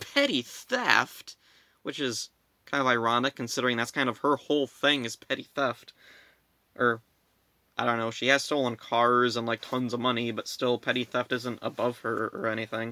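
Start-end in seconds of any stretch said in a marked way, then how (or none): 0.1-1.4 mock, high-pitched, acted disgusted tone. Recapping a scene, voicing Nadira's reaction: mock-disgusted Nadira. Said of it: "Nadira acts all disgusted".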